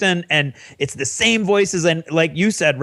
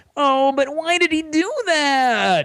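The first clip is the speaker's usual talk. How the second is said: mock very high, slow whine, "that" stretched; 10 semitones higher than usual. Praising an audiobook narrator's acting, imitating his mock whiny voice. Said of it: "He said in a whiny voice".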